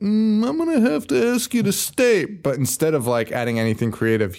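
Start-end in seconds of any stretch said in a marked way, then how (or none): 0.0-2.2 very high-pitched voice. Retelling the movie's boss asking him to stay: imitating the movie's boss. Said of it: "his boss is like".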